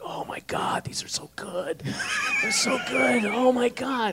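hushed, breathy, whispered gushing. Imitating Bob raving about French fries at lunch: imitating Bob raving over fries. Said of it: "He'd be like".

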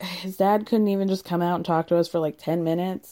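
ordinary talk, nothing marked

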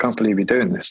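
mock whispering. Retelling an inner voice on the shoulder, imitating a whisper. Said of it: "little man on my shoulder whispering in my ear".

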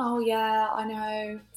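very slow, drawn-out, sassy, gossipy autopilot chatter. Showing the voice put on for small talk at the hairdresser, sassy gossipy hairdresser voice. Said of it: "I have a hairdresser voice that I put on for the small talk".

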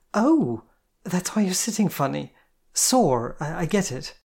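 with a gasp. She asks the narrator something, then speaks with a gasp. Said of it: "and then gasped".

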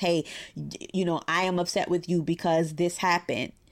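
ordinary talk

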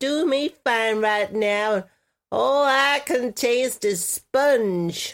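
nasal character voice. Speaker performing a line that the listener then praises, nasal put-on voice. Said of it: "I like you in that voice".

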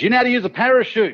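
shrill, very high acted yell. Telling a joke, a panicking man yells to another man shooting past; retelling a yell. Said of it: "he yells out to him".

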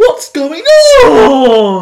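squealed out, loud and high. Showing how the chef sounds at his funniest: high-pitched Gordon Ramsay impression. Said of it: "my favourite is when he goes really high pitched".

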